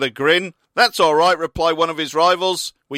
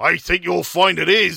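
menacing, threatening, rough-edged, creaky delivery. An old farmer confronts a lawyer on his property, menacing. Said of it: "the old farmer said menacingly".

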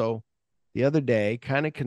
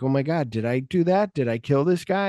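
usual speaking voice

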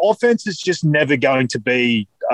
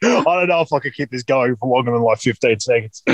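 normal talking voice

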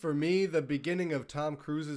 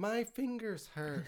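put-on old-lady voice, higher, quieter; 5 semitones higher, 7 dB quieter than usual. Quoting a favorite movie scene, imitating an old lady. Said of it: "he's talking to the old lady".

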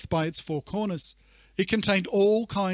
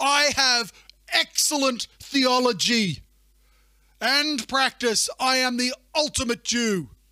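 put-on offended, indignant voice, higher pitch; 6 semitones higher, 3 dB louder than usual. Acting out Peter refusing the unclean food in his vision: imitating an offended Peter. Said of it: "he's like".

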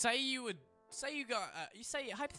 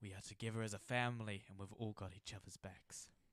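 put-on dramatic theatrical movie-style speech; 12 semitones lower, 12 dB quieter than usual. Giving a friend a pep talk for a joke: put-on dramatic movie speech. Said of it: "sounds like something from a dramatic movie".

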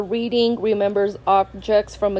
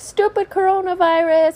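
put-on, very high-pitched, shrill yelling; 10 semitones higher than usual. Telling how he reacted to being stuck in the classroom, retelling him yelling. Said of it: "And then he started yelling".

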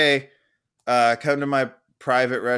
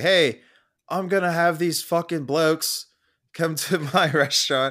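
put-on Australian accent spoken at a raised pitch; 6 semitones higher than usual. Describing a menu as if Gordon Ramsay turned Willy Wonka: Australian-sounding Gordon Ramsay impression. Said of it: "Didn't realize he was Australian".

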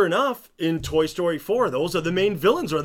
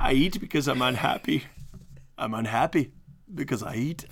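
low-pitched, put-on Scottish accent; 4 semitones lower, 4 dB quieter than usual. Discussing how to do a Scottish accent, quoting lines in a Fat Bastard Scottish accent. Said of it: "you just have to do Fat Bastard".

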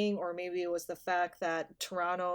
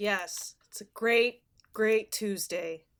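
sarcastic, mock enthusiasm; 2 semitones higher, 3 dB louder than usual. Answering how everyone is feeling this tuesday: sarcastic enthusiasm. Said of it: "Hear the enthusiasm in my voice".

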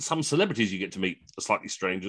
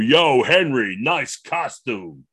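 put-on big, booming American accent, very slow and drawn out; 5 dB louder than usual. Speaker retells an American greeting him on a studio break, big American voice. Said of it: "I hear this big American voice go".

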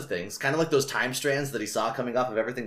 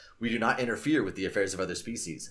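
ordinary delivery

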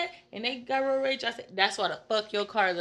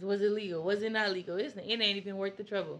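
normal talking voice

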